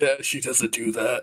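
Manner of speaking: muttered quietly under breath. Speaking in character as the party is invited inside: muttering under his breath. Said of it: "Rufiri says under his breath".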